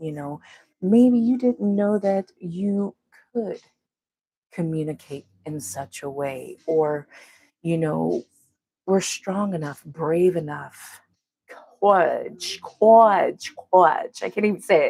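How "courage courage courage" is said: loud, cartoonish, fainthearted storybook lion voice. Talking about inner strength, the speaker repeats one word in a Cowardly Lion voice. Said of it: "I wanted to say it like the cowardly lion".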